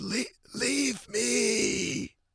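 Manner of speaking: high, wheezy, stuttered cartoon croak. Retelling own words from the weekend after losing the voice: imitating own wheezy croak. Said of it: "I sounded like a cartoon character named Wheezy".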